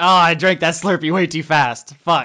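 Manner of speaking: sudden, very loud, high pained gnome cry. Game master voicing a gnome struck by a sudden brain freeze, gnome in brain-freeze pain. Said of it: "the world's worst brain freeze. He's like".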